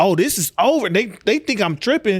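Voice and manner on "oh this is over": half-shouted, mildly raised voice. Retelling watching a fight from up top, imitating own past screaming. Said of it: "I was screaming at people".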